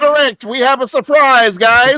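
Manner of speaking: delighted, excited tone.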